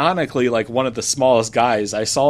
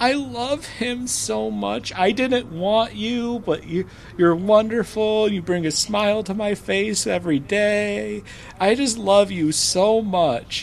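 very high, tearful mock weeping speech; 9 semitones higher than usual. Retelling how she cried holding the adopted cat, imitating someone crying. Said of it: "she's crying, going".

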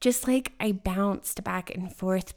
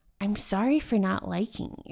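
ordinary talk, nothing marked

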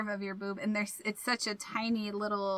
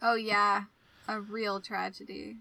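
dry, sarcastic tone. Reacting to a lost glove in a cartoon episode: sarcastic. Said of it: "You said it very sarcastically".

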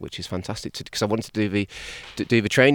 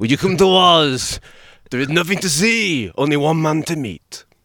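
put-on French priestly accent, high-pitched and slow; 7 semitones higher, 6 dB louder than usual. Quoting a french priest's line about coming to oz, in an imitated french accent. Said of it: "it's my French accent".

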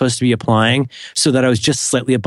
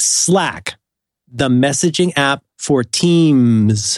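very carefully enunciated, deliberate reading; 2 semitones higher than usual. Reading a sponsor disclaimer aloud, reading very carefully. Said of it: "I'm going to read this so carefully".

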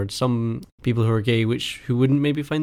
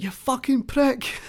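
put-on sudden, very high shouted outburst; 10 semitones higher than usual. Retelling how their dad yelled at a kid on a bike, retelling a shout. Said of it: "My dad just shouted out".

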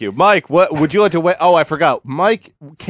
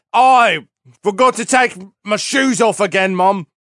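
put-on boy's Australian accent, high, slow, slipping into English accent; 5 semitones higher than usual. Acting out a line for Percy, who is Australian: imitating Percy, Australian accent. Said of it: "he's Australian".

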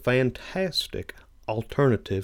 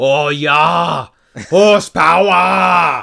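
booming put-on German accent, high, with drawn-out "yeah"; 6 semitones higher, 12 dB louder than usual. Speaker answering another's question, in a put-on German accent. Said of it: "I love your accent".

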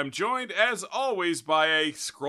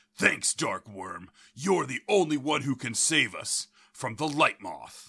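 low, deep, put-on character voice; 4 semitones lower, 3 dB quieter than usual. Voicing a character who thanks Darkworm, in a deep character voice. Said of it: "I'm going to do kind of like a deep voice there".

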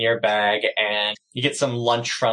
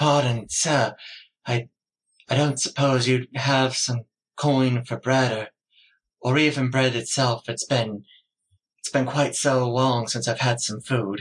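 ragged elf character voice, much higher pitch; 2 semitones higher than usual. Narrating the scene, the storyteller voices a ragged elf asking for coin; ragged elf beggar voice. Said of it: "You're sitting down and you're having a delightful lunch of cinnamon hardtack in the blazing summer sun when a middle-aged elf approaches you. He is incredibly ragged looking. / You're sitting down an".

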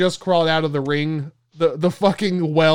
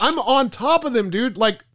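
ordinary talk

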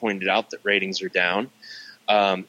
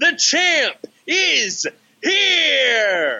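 yelling, higher pitch; 4 dB louder than usual. Reading own text message aloud to co-hosts, doing the shouty part: shouting. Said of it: "let me do the shouty part".

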